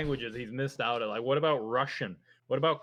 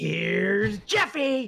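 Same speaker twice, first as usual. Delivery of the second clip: loud, high, belted horror-movie madman voice; 6 semitones higher, 5 dB louder than usual. Acting out a ghost hacking through the door: Jack Nicholson voice from The Shining. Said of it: "like Jack Nicholson from The Shining".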